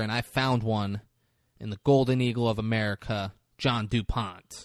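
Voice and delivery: ordinary talk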